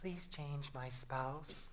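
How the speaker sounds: very soft, hushed put-on female voice. Acting out a prayer to the Lord, put-on female voice. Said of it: "Notice I'm praying in a female voice".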